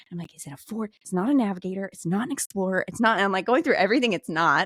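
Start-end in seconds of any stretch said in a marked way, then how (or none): 0.3-3.2 panic in the voice. Retelling being questioned about past cars, imitating own panic. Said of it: "panicking a little bit".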